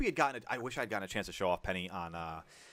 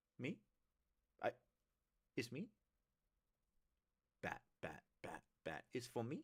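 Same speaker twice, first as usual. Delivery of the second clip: slow, drawn-out cat voice, feigning innocence; 11 dB quieter than usual. Voicing what the cat's innocent look says, innocent cat voice. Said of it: "looking so innocently at me".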